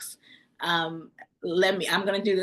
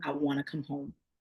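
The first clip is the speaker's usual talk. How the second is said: acted crying, lower and quieter; 5 semitones lower, 7 dB quieter than usual. Retelling a phone call to a husband, imitating own crying. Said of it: "I called my husband on the phone crying".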